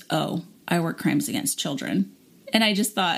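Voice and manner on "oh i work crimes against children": level, flat, expressionless deadpan delivery. Retelling a man's reply after hearing the speaker's job, imitating his deadpan reply. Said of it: "he looked at me deadpan and he goes".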